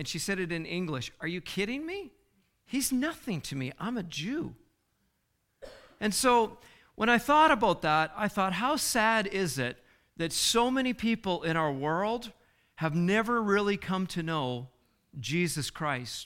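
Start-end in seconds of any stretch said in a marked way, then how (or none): 1.2-4.5 dismissive, contemptuous, scornful, disdainful tone. Speaker quotes a woman's answer to a reporter, retelling a disdainful reply. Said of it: "She just said with such disdain".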